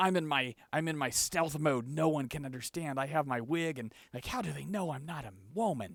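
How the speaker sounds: put-on gravelly voice. Imitating how they all sound: raspy voice with rasp underneath. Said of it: "kind of rasp underneath".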